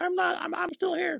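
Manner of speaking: very high, creaky, raspy cartoon germ voice. Speaker giving a speech briefly voices the virus itself: COVID virus voice. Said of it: "That's my COVID virus voice".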